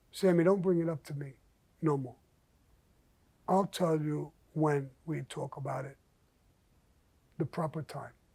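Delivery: gentle, soft, hushed voice. Sammy quotes what the man told him back then, in a soft voice. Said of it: "in a soft voice".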